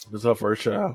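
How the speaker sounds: voice breaking. Sharing that her sister is having her first child, voice cracking. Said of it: "my voice cracked".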